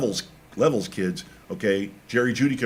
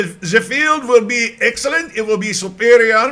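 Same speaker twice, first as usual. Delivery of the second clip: mock German accent, higher and louder; 13 semitones higher, 9 dB louder than usual. Predicting the field will be excellent: put-on german accent. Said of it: "I shouldn't say superior with a German accent".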